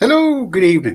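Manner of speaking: shrill, very high voice. Greeting listeners with a voice that forces its own way out, do a Mrs. Doubtfire impression. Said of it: "I did the Mrs. Doubtfire impression".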